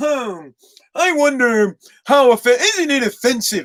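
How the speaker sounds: slow, snooty, failed posh upper-class rich voice. Mocking an NFL player at home being sophisticated, in a bad rich guy voice. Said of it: "I can't even do a fucking rich guy voice".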